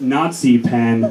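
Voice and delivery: slow, low deadpan delivery. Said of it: "do you know Hitler's favorite Christmas candy".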